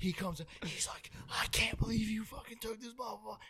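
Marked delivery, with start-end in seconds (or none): 1.3-3.4 put-on livid, enraged, furious shouted outburst. Retelling Trace coming back livid: imitating Trace screaming. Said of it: "And he's fucking screaming".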